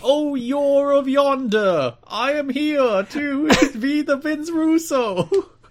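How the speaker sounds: very high, loud put-on mystical fantasy character voice. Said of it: "the voice he gave whatever mystical character".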